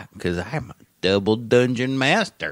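mocking slow country drawl. Mocking how someone was made to sound: slow West Virginia hick voice. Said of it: "All slow and shit".

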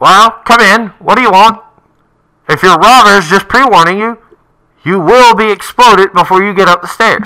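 shrill, very high, loud voice echoing down a pipe. Someone behind a door answers the visitors, in a voice through a pipe. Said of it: "you hear a voice come through the pipe, and it goes".

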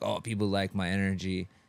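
plain

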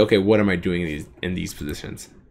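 normal talking voice

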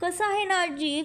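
ordinary talk, nothing marked

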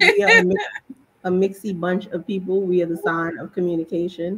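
usual speaking voice

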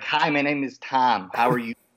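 very nasal Michigan Great Lakes accent. Showing the accent he had when he moved from Michigan, nasal Great Lakes accent. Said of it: "Great Lakes accent, which is very nasally".

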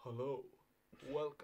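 hushed, soft priest voice. Opening a Good Friday live stream, doing a priest voice. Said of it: "I'll do a priest one".

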